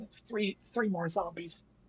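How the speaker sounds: barely audible, hushed, very quiet half-whisper. Warning another character about three more zombies nearby: half-whispering. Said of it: "just whisper over to Marco".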